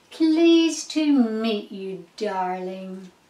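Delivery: plain reading voice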